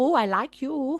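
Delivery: put-on heavy Caribbean-accented voice. Retelling how a woman talks to the men buying her drinks, in a thick Caribbean accent. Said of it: "she's got like a real thick Caribbean accent".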